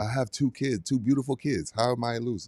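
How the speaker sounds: put-on soft Greek accent. Speaking as Giannis to Rudy, in a Giannis Greek accent impression. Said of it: "Our Greek accent needs work".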